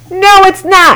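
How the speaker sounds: full, high-pitched shout. [name], arguing with Martin over a camera, shouting back at him. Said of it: "shouted [name]".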